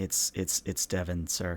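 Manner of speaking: faint, far-off voice. Narrator voicing an unseen assistant answering a call, Devin's very faint voice. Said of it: "you hear very faintly, like legitimately faintly".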